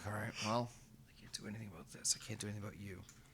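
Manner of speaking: put-on very quiet, sorrowful, sad murmur. Retelling what a man said while kneeling on the ground: mock-sad voice. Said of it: "You can hear the sadness in his voice".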